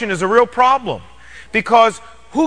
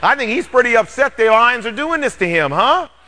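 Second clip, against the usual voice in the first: plain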